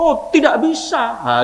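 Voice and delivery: put-on Indonesian spoken with a Madurese accent. Explaining regional accents in Indonesian, the speaker demonstrates a Madurese accent. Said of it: "Orang Madura juga begitu".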